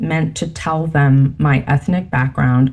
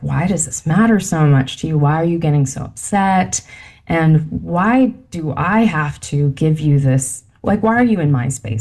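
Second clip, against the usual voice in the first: ordinary talk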